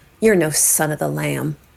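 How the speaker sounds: grudging, through gritted teeth. Storyteller voices a character's reply to someone, spoken through gritted teeth. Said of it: "through gritted teeth".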